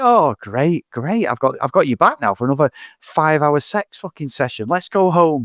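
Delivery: bored, flat, punchless, blasé delivery. Mocking an actor's ending line with no emotion: imitating a blasé actor. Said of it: "it's just like".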